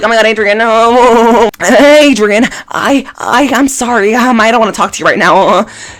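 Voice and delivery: very high stuttering, "no" drawn out. Recalling how Marinette once spoke to Adrien: stuttering, stumbling Marinette impression. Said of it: "Marinette was stuttering and stumbling".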